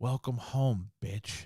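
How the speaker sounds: soft, hushed, sinister demon voice. Retelling what a woman heard after the door slammed, demonic voice. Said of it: "she heard in like a demonic voice".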